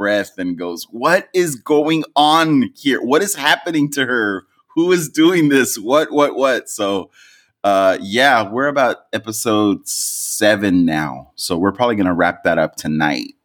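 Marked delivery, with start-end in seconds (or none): 0.9-6.7 exasperated, higher-pitched disbelief. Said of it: "she just lets out an exasperated, like, breath and goes".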